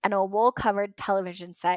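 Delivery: ordinary delivery, nothing marked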